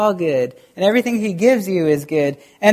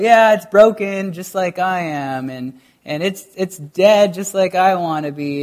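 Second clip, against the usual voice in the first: ordinary talk, nothing marked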